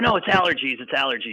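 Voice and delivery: normal talking voice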